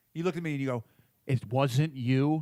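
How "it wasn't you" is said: pointed, accusing tone. Retelling being questioned about the shower, imitating an accusatory question. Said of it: "Very accusatory".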